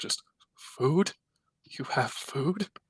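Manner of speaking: crazed voice, words bubbling through laughter. Game master voicing someone woken at the sound of rations: crazed, bubbling laugh. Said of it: "crazed laugh kind of like bubbling".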